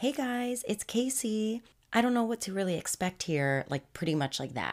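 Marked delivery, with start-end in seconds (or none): 0.0-3.7 put-on young-girl voice, pitched up high and slow. Retelling what a young girl said to the camera: Casey voice, raised a few octaves. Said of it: "raise my voice a few octaves".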